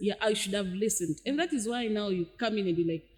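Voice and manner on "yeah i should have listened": usual speaking voice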